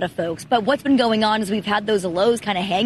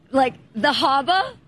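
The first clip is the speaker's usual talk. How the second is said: harbor said with dropped r, attempted Boston accent; 4 semitones higher than usual. Asked by the host to show off an accent, trying a Boston accent. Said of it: "practicing a Boston accent".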